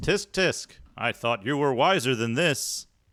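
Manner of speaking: lofty disembodied narrator voice. Reading a game's text aloud on stream as an unseen voice, bellowing. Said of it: "An unseen voice bellows".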